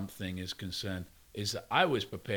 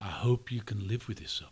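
put-on thick Scottish accent. Retelling what a man said while leaning into his face, in a heavy Scottish accent. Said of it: "he just said in a heavy Scottish accent".

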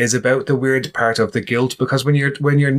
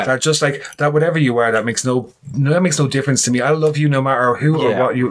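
ordinary talk, nothing marked

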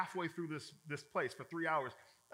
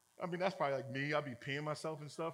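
ordinary delivery

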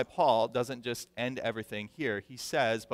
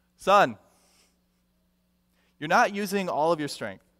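loud, pitched-up yell calling out; 6 semitones higher, 7 dB louder than usual. Retelling a father calling to his son stuck at a stump, retelling a yell. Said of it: "he yells out to his son".

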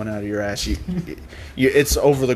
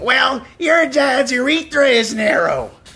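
put-on cartoon teen boy voice, much higher, louder; 13 semitones higher, 5 dB louder than usual. Trying out voices with others who feed lines, Bobby meets Chris Griffin voice. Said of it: "maybe I can do like Bobby meets Chris Griffin".

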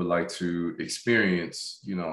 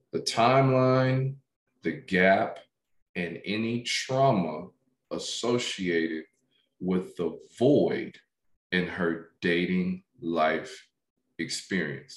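slower, measured, careful, deliberate pace. Speaker repeating their last sentence, saying it again slower. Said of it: "I'm going to try to say that again slower".

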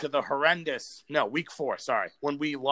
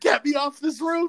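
mock very high-pitched desperate screaming; 13 semitones higher, 4 dB louder than usual. Retelling a video of a man at a game, imitating him screaming. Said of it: "he was screaming".

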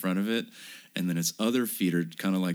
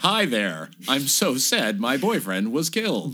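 put-on loud, pitched-up American lady accent; 6 semitones higher, 5 dB louder than usual. Discussing a Polish-born woman, the speaker imitates her American voice. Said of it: "her american ass voice is like".

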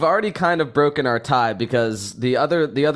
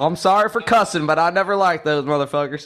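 put-on Southern accent, higher pitched; 6 semitones higher than usual. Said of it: "Brian Kelly's Southern accent".

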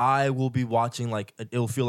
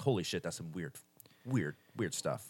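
low, soft, stunned murmur. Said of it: "you're like".

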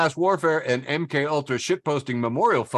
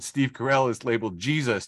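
ordinary talk, nothing marked

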